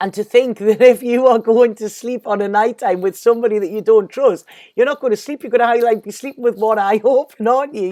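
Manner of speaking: laughing through the words, high-pitched and loud.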